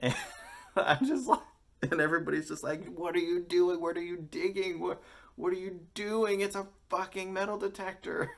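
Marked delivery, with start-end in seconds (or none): 2.9-8.3 mock crowd-style yelling, pitched up. Retelling how everybody reacted to a woman with a metal detector, imitating people yelling. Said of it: "Everyone is yelling at her".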